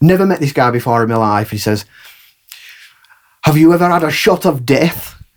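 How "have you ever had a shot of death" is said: put-on strongest, thick Glaswegian accent, pitched up. Retelling a stranger coming up before a show, strong Glaswegian accent. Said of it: "in the strongest strongest Glas- Glaswegian accent".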